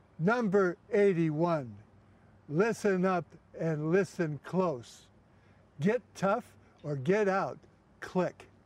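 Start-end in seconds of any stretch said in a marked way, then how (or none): 0.2-7.6 mild hint of a booming voice. Retelling how Cosell answered his request, in a booming Cosell voice. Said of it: "that booming voice".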